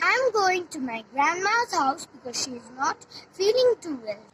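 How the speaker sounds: plain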